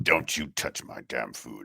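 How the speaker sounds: put-on proud man voice. Imitating a one-handed man refusing help with his steak: imitating a prideful man. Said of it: "his prideful".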